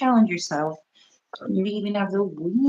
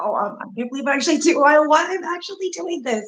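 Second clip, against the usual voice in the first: acted jittery, nervous, thrilled disbelief, very high, rising; 10 semitones higher, 3 dB louder than usual. Acting out the other speaker going live, from a vision: imitating someone scared but excited. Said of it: "scared, but excited".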